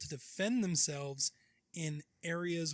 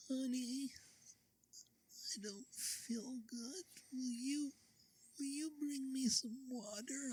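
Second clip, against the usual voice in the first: soft, pitched-up, put-on babyish voice; 9 semitones higher, 7 dB quieter than usual. Showing how she asks for water when sick in bed, baby voice. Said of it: "I'm assuming that's what the baby voice is".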